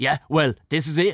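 irritated angry man. Retelling what an angry man said on arrival: imitating an angry man. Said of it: "and he's real angry".

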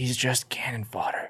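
hushed whisper. Speaking in character, leaning to a companion about another character: whispering. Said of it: "whisper to her".

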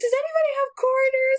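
play-acted, very high-pitched, frantic, panicked voice. Retelling a failed card payment for laundry, the speaker acts out freaking out and asking everyone. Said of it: "freaking out".

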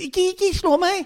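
put-on very high, babyish little voice. Imitating someone who answers being hit back in a baby voice. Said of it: "så snakker du med babystemme".

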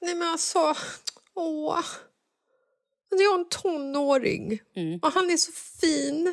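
crying through the words, tearful, slow and high. Speaker admits starting to cry while talking about him: crying. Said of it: "Och nu gråter du".

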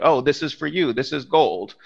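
play-acted child proclaiming grandly, stage style. Retelling how a kid in a Christmas play presents gold: imitating a kid announcing loudly. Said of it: "will pronounce very loudly".

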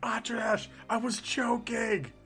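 loud whisper, almost a yell. Calling out in character to atradesh during the game: whisper yell. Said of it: "whisper yell to Atradesh".

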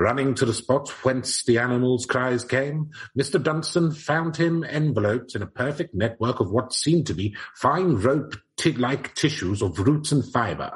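put-on old-timey 1889-style reading voice. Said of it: "I'll read it in eighteen eighty-nine voice".

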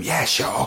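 soft, whispered, barely voiced. Retelling a reply to the man who stopped the van: retelling a whisper. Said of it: "I whispered back to him".

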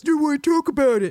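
high, taunting, mocking tone. Describing a favourite scene from the series, quoting Villanelle: imitating Villanelle's mocking voice. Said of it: "she does that mocking voice".

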